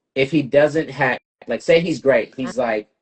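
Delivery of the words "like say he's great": usual speaking voice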